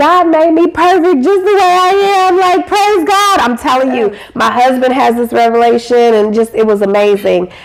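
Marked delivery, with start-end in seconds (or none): 0.0-3.4 crying, tearful voice pitched very high. Speaker retelling their own past moment after a training, retelling crying. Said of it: "I'm crying like".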